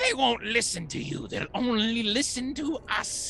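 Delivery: high, gloating hologram voice. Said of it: "who turns to you and says".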